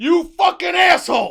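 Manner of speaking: furious outburst, very loud, high and shrill. Acting out reactions when someone doesn't pick up the phone, mock anger. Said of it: "Third is anger".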